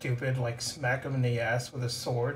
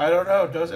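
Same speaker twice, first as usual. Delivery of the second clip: very loud, high calling voice; 5 semitones higher, 10 dB louder than usual. Answering a companion who has stuffed cloth in their ears: kinda loud. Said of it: "Like, kinda loud".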